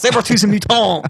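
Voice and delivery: put-on French accent, high. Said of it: "Wolverine, what are you trying to say here?".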